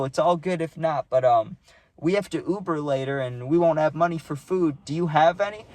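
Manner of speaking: normal talking voice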